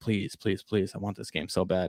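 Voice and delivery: mock earnest, imploring, pleading tone. Retelling begging mom at Walmart for a game: imitating own past begging. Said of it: "I was, like, begging her".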